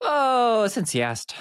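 slight Irish lilt in a very high voice. Asked how things have been, the speaker starts the answer with a slight Irish accent. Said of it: "I had a little Irish accent there for a second".

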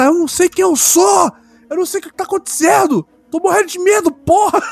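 play-acted very high, shrill, out-of-control yelling. Recounting a show scene where a man starts yelling at a woman: retelling a shout. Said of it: "o cara começa a gritar".

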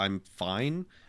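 ordinary delivery

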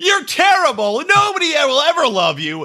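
acted-out abusive screaming, pitched high. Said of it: "And then he started screaming at him".

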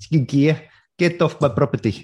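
slow, drawn-out put-on South African accent. Mimicking the other speaker's south african accent. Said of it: "the South African accent".

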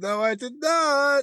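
laughing, very high, slow and drawn out. Answering whether they watched the match, laughing while talking. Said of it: "And I'm laughing".

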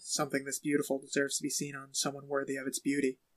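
silky, smooth, low charmer voice. Recapping an episode, quoting Chuck's line to a necklace's recipient: smooth Chuck voice. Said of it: "very smooth".

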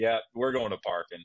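ordinary talk, nothing marked

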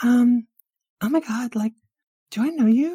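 very high, loud voice. Voicing Starfire meeting someone: imitating Starfire. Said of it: "Starfire was like".

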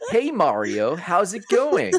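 over-the-top peppy American announcer voice, high and swooping. Describing a talking flower in a Mario game, in a Nintendo Treehouse trailer voice. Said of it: "just an overly excited American dude".

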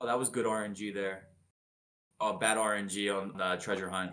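very monotonous, quiet, flat, low-key droning monotone. Imitating a favorite speedrunner commenting on a Zelda run, very monotonous ZFG impression. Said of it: "just say very monotonous".

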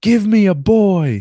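very slow, very high, very loud booming drawn-out scream. Retelling a wrestler alone in the ring calling for help: imitating Dalton Castle screaming. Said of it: "he just screams".

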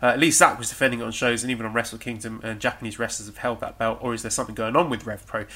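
normal talking voice

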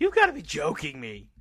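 loud, belted, punchy delivery. Imagining an interview answer, doing Billie Kay's catchphrase: Billie Kay impression. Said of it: "Billy does the whole".

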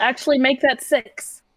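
slow, unhurried calling out. A player's character speaks up, yelling. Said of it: "I'm gonna yell".

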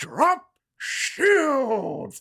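put-on very high, over-the-top, booming captain's bellow. Describing a show's cold open, acting out a character's line: bellowing. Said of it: "he just bellows".

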